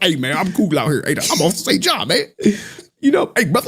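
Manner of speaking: put-on chummy slang voice, pitched high.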